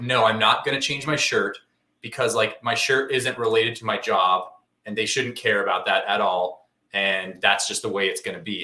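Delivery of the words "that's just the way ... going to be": normal talking voice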